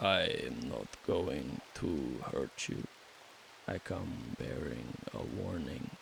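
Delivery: quiet, hushed, breathy whispered creature voice. Voicing a hooded vampire bat who warns a player: voicing a vampire bat. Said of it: "And he says".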